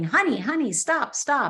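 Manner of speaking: put-on woman's voice, light, calling out. Speaker recalls a lady running down the street toward them, imitating a lady yelling. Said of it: "she's yelling".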